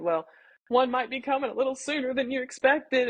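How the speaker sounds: weeping, tearful crying, pitched high. Retelling breaking news to their dad, acting out crying. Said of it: "And I'm crying like that".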